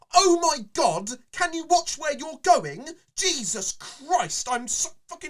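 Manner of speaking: mock very loud, very high, shrill, indignant, furious outburst. Retelling how a person bumped by fleeing guests snapped at them: mock angry outburst. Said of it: "your outburst of fucking nerd rage".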